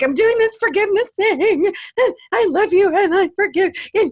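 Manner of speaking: fake ugly crying. Retelling a forgiveness call from a payphone: imitating own sobbing. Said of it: "ugly crying".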